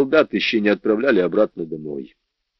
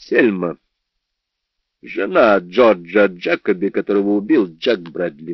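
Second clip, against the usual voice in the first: ordinary delivery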